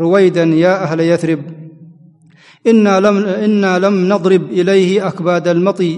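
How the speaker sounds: usual speaking voice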